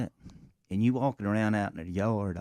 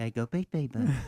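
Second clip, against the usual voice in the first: imitated baby talk; 2 semitones higher than usual. Showing how to coax dogs to pee: imitating baby talk to dogs. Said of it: "You gotta do that baby talk to 'em".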